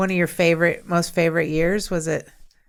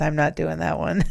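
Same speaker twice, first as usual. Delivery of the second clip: put-on whisper under the breath. Retelling a remark made to another speaker: imitating own whisper. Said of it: "I whispered to him under my breath".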